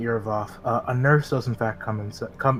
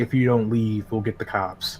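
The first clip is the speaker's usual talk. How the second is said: ordinary talk, nothing marked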